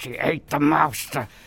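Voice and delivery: forced out through a clenched jaw, gritted teeth. Retelling saying the same line fifteen times, said through gritted teeth. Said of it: "I was saying it with, like, gritted teeth".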